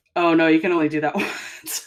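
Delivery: mock sarcastic, put-on sarcastic delivery. Retelling how a film referenced the maneuver: imitating a sarcastic line. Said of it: "very sarcastically".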